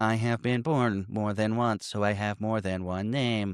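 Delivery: eerie, creepy, robotic, machine-like horror voice. Recapping a show, voicing a possessed character's weird voice, Stephen Hawking-like horror voice. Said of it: "mix of like Stephen Hawking and horror".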